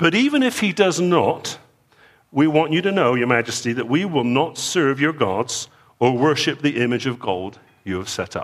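put-on dignified English accent. Reading aloud the nobles' reply to King Nebuchadnezzar: English accent. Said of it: "You can almost hear the English accent".

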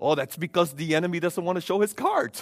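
put-on heavy, strong Dutch accent. Quoting a man's reply to the speaker's question, in a strong Netherlands accent. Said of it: "in a strong Netherlands accent".

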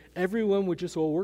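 plain

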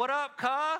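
casual, high, loud shouted voice. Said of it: "I'm like".

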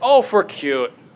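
Minnesota accent with stretched, long vowels. Quoting what people in Minnesota say: Minnesota accent, long vowels. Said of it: "as we say in Minnesota".

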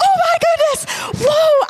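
mock shrill thrilled screaming, very high, loud. Retelling the moment he turned and walked away, re-enacting an excited scream. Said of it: "I didn't mean to be that loud".

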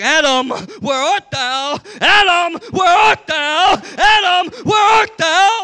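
very loud, booming, drawn-out calling voice. Retelling the garden story, voicing God calling out to Adam. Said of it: "He's like".

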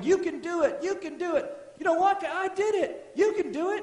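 acted-out, high-pitched, cheering holler. Picturing people in heaven cheering someone on: imitating people hollering. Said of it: "they're just hollering".

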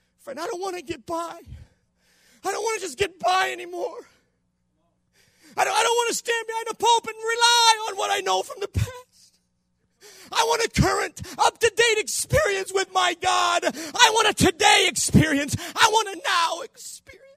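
overcome, heartfelt delivery. A preacher addressing his audience as friend: emotional. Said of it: "I'm sorry I'm emotional about this".

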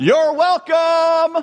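very high-pitched sarcastic shouting. Retelling a friend's story of holding the door, retelling a sarcastic yell. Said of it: "I just yelled into the coffee shop".

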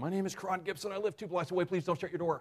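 high-pitched, pleading shout. Recalling lying on a sidewalk at night as someone opens a door, retelling own shouting. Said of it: "and I start shouting".

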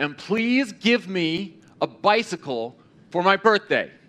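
very loud, ringing, clear, high-pitched voice. Retelling a girl's prayer, very loud and clear. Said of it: "in a very loud and clear voice".

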